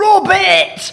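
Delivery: put-on high, loud kids' screaming.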